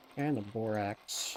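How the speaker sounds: flat, low, uninterested, bored drone. Listing supplies, saying the borax in a deliberately bored voice. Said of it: "I said it in a bored voice because it's borax".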